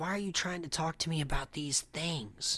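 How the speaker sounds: play-acted angry, annoyed, indignant tone. Retelling a story of a man questioned about Bigfoot: imitating an angry man. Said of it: "the guy gets mad".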